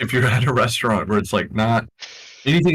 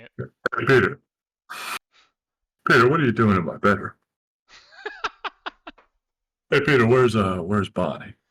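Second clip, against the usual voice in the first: put-on, fake yawning voice. Retelling the bit he kept doing while sitting in an IHOP, imitating a yawning voice. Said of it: "you just pretend to yawn and that's how you do that voice".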